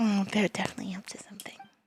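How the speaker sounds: fast, hushed whisper.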